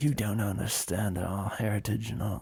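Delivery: fake English accent, posh and common. Imitating people in England insulting the speakers: put-on mixed upper and lower class English accent. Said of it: "I mixed a, an upper class English accent with a lower class".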